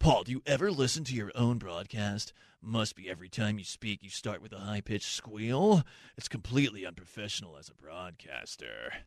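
put-on deep, soft voice, deliberately deepened. Reading out a text addressed to Paul about his broadcast, put-on deeper voice. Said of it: "I'm speaking in a deeper voice".

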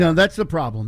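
ordinary talk

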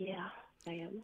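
very faint, very quiet, barely audible, barely carrying voice. An anonymous caller answers the host who asked if they are ready: speaking very quietly. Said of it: "we cannot hear you".

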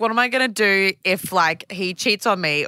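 ordinary talk

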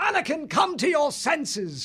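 very high-pitched, drawn-out, gruff, angry shout. Voice actor demonstrating a movie character shouting at anakin: gruff shouting character voice. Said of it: "it's this very kind of gruff kind of thing".

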